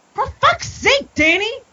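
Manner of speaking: as exuberant as possible. Reading out a listener's all-caps email after being asked: as exuberant as possible. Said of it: "as exuberant as you can".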